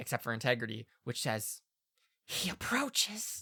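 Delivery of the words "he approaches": eerie, ghostly, high whisper in a different voice. Voicing a single whisper from a character's mouth: eerie whisper. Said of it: "a single whisper from Alina's mouth, not her voice".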